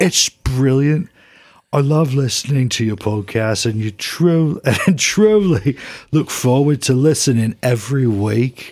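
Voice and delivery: put-on Birmingham-accented rock star voice. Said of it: "I'm gonna read it like [name]-, [name]".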